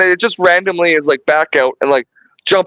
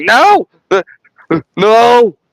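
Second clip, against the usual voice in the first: put-on high, screamed cry; 5 semitones higher, 4 dB louder than usual. Retelling a movie scene where the predator pulls Nettles out: imitating Nettles screaming. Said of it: "Nettles is just screaming like".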